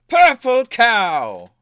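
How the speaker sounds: very loud, high yell with cow drawn out. Turning to Sunny, a character does his little trick and shouts into Sunny's mind, shouting. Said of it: "shouts in your mind".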